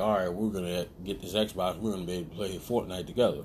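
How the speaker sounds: usual speaking voice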